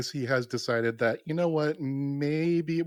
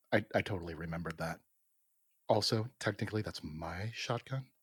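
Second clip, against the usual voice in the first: soft, quiet, said out the side of mouth; 7 semitones lower, 8 dB quieter than usual. Speaking in character out of the side of the mouth: quiet aside. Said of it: "I kinda quietly say to Doctor Jensen".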